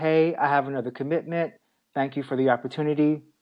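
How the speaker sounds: normal talking voice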